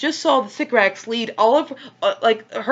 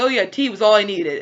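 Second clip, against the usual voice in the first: ordinary delivery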